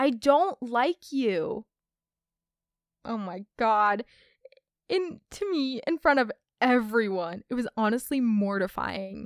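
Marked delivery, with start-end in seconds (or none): 0.0-1.6 slow, drawn-out, loud stage-whispered hiss. Retelling how a boy answered at a silent talent show: imitating a loud whisper yell. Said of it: "he decided it was the best idea to whisper yell".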